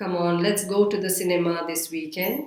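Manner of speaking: level, unchanging tone throughout, flat monotone. Showing what monotonous speech sounds like: flat monotone. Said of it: "Now that's so monotonous".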